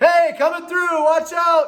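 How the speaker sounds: very high, loud, earnest yell. Advising how to scare away a bear, the speaker demonstrates: loud shout. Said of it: "talk like you mean it".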